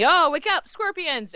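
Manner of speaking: very high, booming, thundering yell. Everyone in the scene hears Luke shout out: Luke's booming yell. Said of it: "all of you hear the booming voice of Luke".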